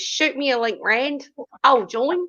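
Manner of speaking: failed put-on British accent drifting into Australian. Reading out a chat message aloud: bad british accent sounding aussie. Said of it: "it sounded more like a Zuzi there you were doing".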